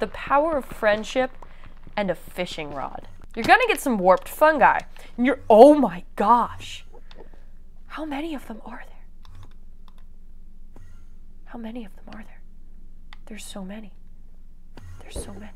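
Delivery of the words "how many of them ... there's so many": fast, rushed whisper full of amazement. Playing in the 1.16 nether, explaining to viewers; whispered.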